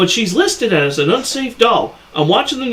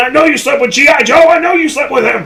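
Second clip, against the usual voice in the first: mock yelling in a high-pitched scream; 8 semitones higher, 4 dB louder than usual. Acting out a drunk Ken being led off in cuffs: imitating Ken screaming. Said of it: "He's screaming".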